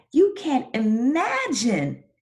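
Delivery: very high, swooping, joyful, expressive reading. Modeling how to read a dialogue sentence aloud, reading with happy expression. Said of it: "I'm going to practice".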